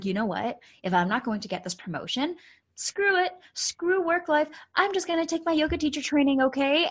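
joking, half-serious delivery. Speaker retells what they said to a friend driving back to Edmonton: retelling a joking remark. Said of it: "Like I said it jokingly".

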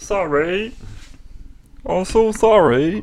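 high, slow, drawn-out mock sympathetic tone.

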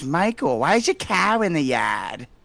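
put-on Boston accent. Quoting a grandmother from the area: put-on boston accent. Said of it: "Mike does a pretty good Boston".

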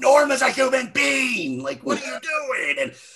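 mock screamed line, very high and shrill. Describing a dramatic TV scene and acting out a character's line, retelling a scream. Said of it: "he's screaming like".

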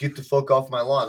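mock elderly man voice. Imagining seventy-year-old James Burke yelling at them, imitating seventy-year-old James Burke. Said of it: "seventy-year-old James Burke being like".

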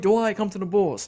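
loud yell, calling out. Recalling a free-agent player walking past in line, the speaker is retelling a yell. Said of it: "I was yelling like".

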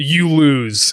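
plain

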